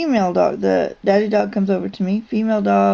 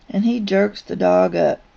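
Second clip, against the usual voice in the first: plain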